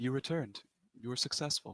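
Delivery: soft, hushed, eerie half-whisper. A narrator voices what speaks from a glowing pool, in a soft half-whispering voice. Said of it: "a soft, sort of whispering voice that says".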